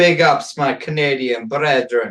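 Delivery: slow, best-attempt Jamaican accent. Reading a message off the screen aloud, in a best-attempt Jamaican accent. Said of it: "I tried to say it in my best uh, Jamaican accent there".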